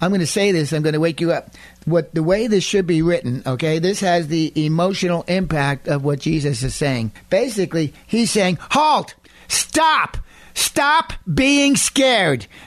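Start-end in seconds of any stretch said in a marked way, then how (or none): 8.6-12.4 put-on very slow, strong, firm, stern authoritative voice. Explaining how Jesus spoke to them, act out his strong, authoritative command. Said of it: "in the tone that he's saying to them".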